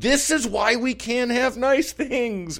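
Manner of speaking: very high, shrill, wailing yell, acted out. Retelling what she yelled in despair, retelling a yell. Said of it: "she just yelled".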